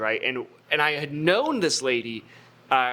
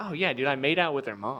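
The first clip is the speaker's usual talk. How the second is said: casual, slightly proud, offhand, amused, unfazed tone; 4 dB quieter than usual. Retelling a dad's reply: imitating someone unfazed and amused. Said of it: "completely unfazed, slight smile on his face".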